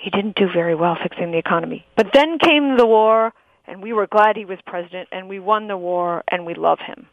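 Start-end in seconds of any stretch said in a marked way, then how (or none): 0.0-1.8 understated delivery, low voice, dropped down. Explaining how a documentary alternates loud and low voice, low voice. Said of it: "low voice".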